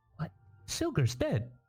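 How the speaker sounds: tiny, very squeaky, high fairy voice. Narrating a small fairy creeping out from a prince's armor: squeaky fairy voice. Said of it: "in a very squeaky voice says".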